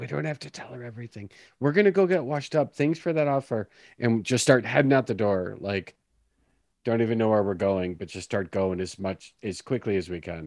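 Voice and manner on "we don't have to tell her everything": very quiet, hushed, half-whispered aside. Speaking in character to Joe, half-whispering as softly as possible. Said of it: "as sort of whispery as I possibly can".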